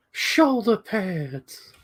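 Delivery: very high, silly cartoon-bear voice. Trying out funny voices, Winnie the Pooh voice. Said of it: "that just sounds like Winnie the Pooh".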